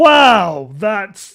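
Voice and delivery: very slow, fake-impressed sarcasm, swooping drawn-out wow. Reacting to a tiny monthly profit left over: sarcastic fake amazement. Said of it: "I'm being sarcastic".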